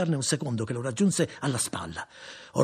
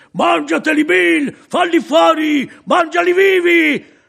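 very high, loud, booming, ecstatic, shrill scream; 14 dB louder than usual. Jumping on his wagon seat, a spectator cheers bill on, shouting ecstatically. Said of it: "gridando come in estasi".

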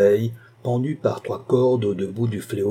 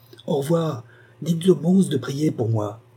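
calling out from a distance, higher pitched; 4 semitones higher than usual. Running off, she calls back from afar to the old woman. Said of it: "cria encore".

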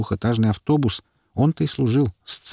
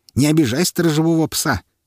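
bright, merry, cheerful, pitched-up exclamation; 6 semitones higher, 3 dB louder than usual. The mutant tosses the small dog to the narrator: cheerful exclamation. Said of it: "весело воскликнул мутант".

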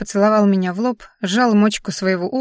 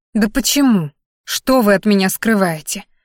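usual speaking voice

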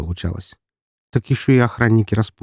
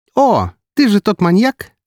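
very high, merry, cheerful sing-song outburst; 13 semitones higher, 4 dB louder than usual. A girl recognizes the narrator and points at him, exclaiming cheerfully. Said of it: "весело воскликнула она".

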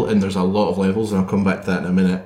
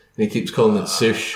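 ordinary talk

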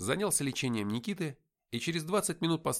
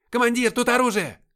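shrill, piercing, very high, loud squealing shriek; 11 semitones higher, 12 dB louder than usual. A private opening a car trunk calls to his commander, squealing. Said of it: "взвизгнул".

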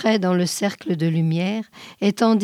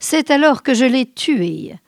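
voice lifted high, crying out; 5 semitones higher, 4 dB louder than usual. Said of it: "l'en criai".

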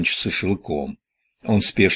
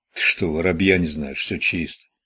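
plain reading voice

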